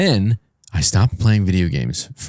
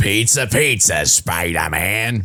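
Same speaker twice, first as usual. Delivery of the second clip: put-on villain voice. Showing the others a Green Goblin impression. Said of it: "great impression of".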